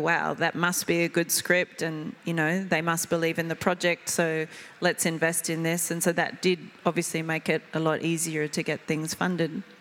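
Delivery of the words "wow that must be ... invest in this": usual speaking voice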